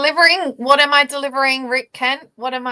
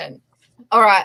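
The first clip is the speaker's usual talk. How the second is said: ordinary talk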